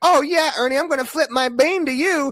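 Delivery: high, gushing, fawning female fan voice. Mocking female fans of a man who smells awful: imitating female fans, mocking. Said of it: "all you ladies out there that were like".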